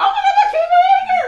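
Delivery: very high, loud, ecstatic, laughing scream. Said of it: "And he's screaming".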